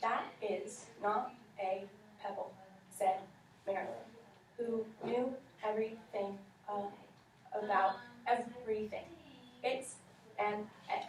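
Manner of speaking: choppy word-by-word delivery. Reading a story aloud to students, each word like a full stop. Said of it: "You were saying each word in a sentence like it had a period".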